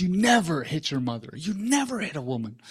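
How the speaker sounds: put-on enraged, furious scolding scream. Re-enacting what they screamed at him inches from his face: retelling a scream. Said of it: "I screamed at him like 6 inches from his face".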